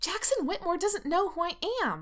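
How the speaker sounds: sharp shrill voice. Narrator reads one character's retort in an argument: shrill. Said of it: "Erica says shrilly".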